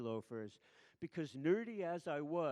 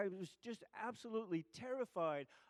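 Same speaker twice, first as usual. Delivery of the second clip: usual speaking voice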